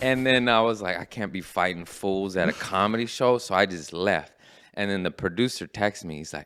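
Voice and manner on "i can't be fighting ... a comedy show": ordinary delivery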